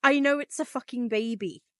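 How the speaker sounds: clumsy, poor put-on Irish accent. Quoting a remembered TikTok sound during a book discussion, poor Irish accent. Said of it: "Sorry for my poor Irish accent".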